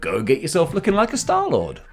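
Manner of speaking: pitch jumping up. Urging viewers to buy the Star-Lord helmet, voice going high. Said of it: "my voice went all high there".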